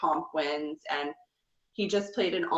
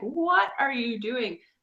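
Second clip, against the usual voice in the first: mock exasperated, high, frustrated yell; 7 semitones higher than usual. Discussing Paul taking Nicole to the final two, retelling screaming at the TV. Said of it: "I was screaming at the TV".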